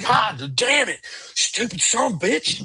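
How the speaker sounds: piercing, very high-pitched, drawn-out scream. Describing a wounded gunman's reaction, retelling his scream. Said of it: "He actually screams like".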